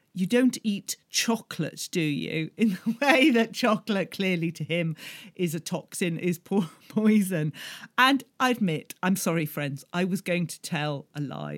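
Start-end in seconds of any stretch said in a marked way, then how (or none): 0.1-2.4 dead serious, very earnest, grave, heartfelt. Retelling how a man leaned in and asked the speaker seriously: mock-earnest question. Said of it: "said in a very earnest voice".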